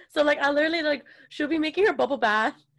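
ordinary talk

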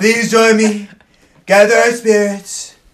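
very loud, high-pitched pleading at full volume. Retelling how Trump spoke to the camera: pleading Trump impression. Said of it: "Trump was literally like, "Look at the camera, pleading".

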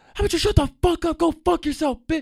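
shrill, very high-pitched, loud furious yelling. Retelling a fight with a bus driver, imitating own yelling. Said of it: "And I start yelling at him".

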